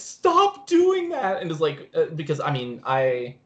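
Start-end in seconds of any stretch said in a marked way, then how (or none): 0.0-1.4 play-acted, freaked-out, shrill yelling at very high pitch. Describing a locker-room scene, acting out Troy going around: retelling Troy's yell.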